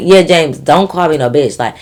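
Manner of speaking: normal talking voice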